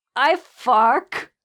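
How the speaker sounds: odd, awkward, strange-sounding tone. Recalling being the nerdy kid trying to be awesome, in a weird tone. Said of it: "I say in a weird tone".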